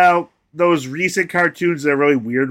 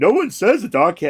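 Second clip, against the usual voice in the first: clumsy cartoon dog impression; 3 semitones higher than usual. Recording a joke line about dogs traveling through time, in a Goofy voice. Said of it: "My Goofy is terrible".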